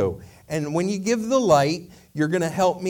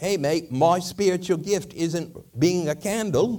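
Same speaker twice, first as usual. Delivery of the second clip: slow, drawled, put-on English accent. Retelling a talking candle's reply to the speaker's question; english accent. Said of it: "he says in an English accent".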